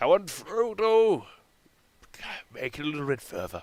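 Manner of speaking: high, half-managed creature voice, one word drawn out. Addressing Frodo while talking about reaching Mordor: attempted Gollum voice. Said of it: "I can't do the Gollum voice".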